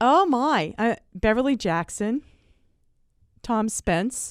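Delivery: slow, moved, heartfelt emotional delivery. Speaker names people they are grateful to for this work, getting emotional. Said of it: "I'm getting emotional".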